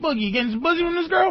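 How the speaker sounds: mock, very high, fast, rattled-off squeaky voice.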